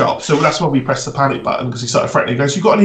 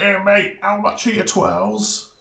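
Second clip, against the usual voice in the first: proper chav voice, higher, slow and drawn out; 6 semitones higher than usual. Retelling a Saturday-night customer asking about twirls, imitating a chav. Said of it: "he was like a proper chav".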